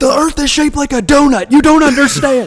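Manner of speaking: put-on shrill, very loud, high drunken shouting. Retelling how a drunk buddy yelled at flat earthers: imitating Arthur yelling drunkenly. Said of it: "he got really drunk and he was just yelling at them like".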